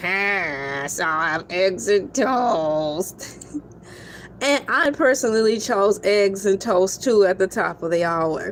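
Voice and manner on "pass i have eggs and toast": low, very slow put-on voice, "pass" dragged out. Announcing which option leads the count, Squidward voice. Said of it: "In my Squidward tentacle voice".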